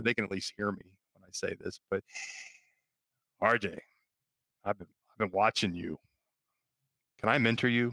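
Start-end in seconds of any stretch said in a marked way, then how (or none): 1.9-7.9 creepiest put-on voice. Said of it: "in my creepiest voice I could find".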